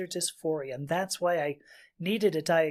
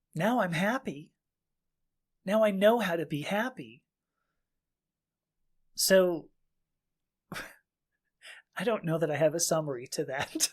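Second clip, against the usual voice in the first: voice fighting to hold back tears. Talking about own gender-affirming care in a conversation; holding back tears. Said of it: "still trying not to cry".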